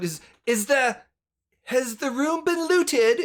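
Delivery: high yell with rising pitch. Recounting what he yelled out, the speaker is retelling a yell. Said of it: "and he yells out".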